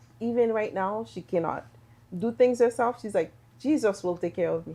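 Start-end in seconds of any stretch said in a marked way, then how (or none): none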